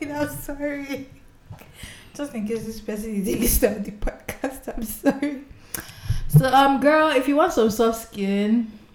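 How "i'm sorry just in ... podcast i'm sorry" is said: talking through laughter, higher. Reacting to a listener's letter read aloud: laughing while talking. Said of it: "I don't know why I'm laughing".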